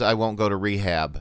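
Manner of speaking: ordinary talk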